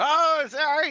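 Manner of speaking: shrill, very high, loud squeaky voice. Player answering a character who yells at them, in a squeaky voice. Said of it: "trying to do a squeaky voice".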